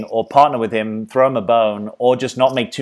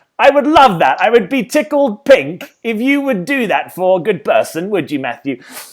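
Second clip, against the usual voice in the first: very high-pitched, put-on English accent; 10 semitones higher, 4 dB louder than usual. Asking matthew for a favor, in a british accent. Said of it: "I don't even know if my British yeah, accent's any good".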